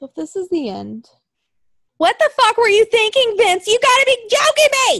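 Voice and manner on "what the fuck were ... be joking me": very high-pitched, loud, furious yell of outrage. Reacting angrily to a favorite team's breakup, angry shouting. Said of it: "Sorry, headphone users".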